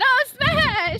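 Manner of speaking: screaming at top of lungs. Voicing a character in a game scene: screaming at the top of lungs. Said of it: "starts screaming at the top of her lungs".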